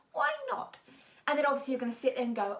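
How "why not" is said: squeaky, very high, put-on little parrot voice. Repeating what she said, for the video, in a little parrot voice. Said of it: "we'll go with the little parrot voice".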